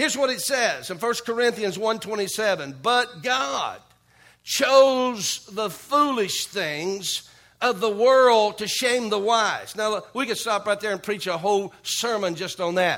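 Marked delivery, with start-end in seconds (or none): 2.8-9.7 very slow, drawn-out reading, every word stretched. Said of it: "I'm gonna read this real slowly".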